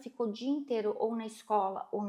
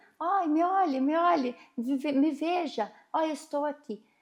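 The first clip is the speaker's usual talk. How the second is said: put-on child yelling high and loud; 5 semitones higher, 5 dB louder than usual. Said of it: "pulando e gritando".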